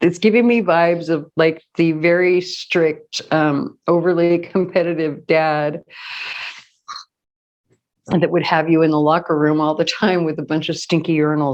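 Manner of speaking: talking through laughter, words broken by laughs. Describing a deck's vibe to listeners, laughing while talking. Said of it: "I'm sorry, I'm laughing".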